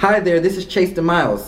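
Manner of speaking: lively upbeat excited tone. Demonstrating a charismatic way to answer the phone: raised, excited tone. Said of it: "I'm super charismatic. My level, my tone is raised. Like, I'm excited to talk to them".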